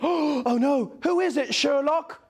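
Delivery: put-on high gasp. In a mock Sherlock Holmes scene, Watson reacts to the deduction, gasping as Watson.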